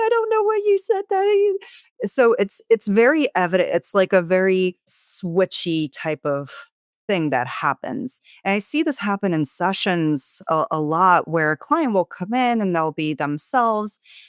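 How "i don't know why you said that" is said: put-on very high, small, tearful, childlike baby voice. Describing how a client in tears switches voices, speaking in a baby voice. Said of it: "maybe you're speaking with a baby voice".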